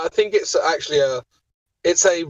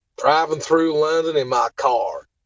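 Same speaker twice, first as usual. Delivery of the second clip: typical Southern US, middle Georgia and Alabama accent. Showing off accents, saying a phrase in a middle georgia, alabama accent. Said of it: "a middle Georgia, Alabama accent".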